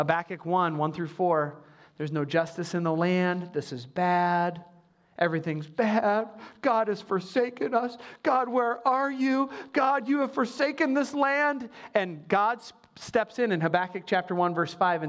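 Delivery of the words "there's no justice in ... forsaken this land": put-on, woe-is-me, despairing, mock lamenting tone. Explaining Habakkuk chapter 1, the speaker acts out the prophet's complaint: mock lamenting. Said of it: "woe is me".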